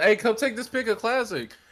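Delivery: high, loud call-out to a crowd. Retelling someone calling to a group of people: imitating someone yelling. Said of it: "yelling out, like, to a group".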